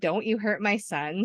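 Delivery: ordinary delivery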